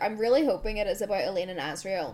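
ordinary talk, nothing marked

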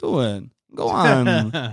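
very slow, deliberate, placed word by word. Playing the Emperor urging a Jedi to kill him: Christopher Walken impression. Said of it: "Great Christopher Walken impression".

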